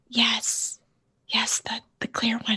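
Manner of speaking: quiet, hushed whisper. Answering whether they have the clear data stick; whispering. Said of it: "Why are we whispering?".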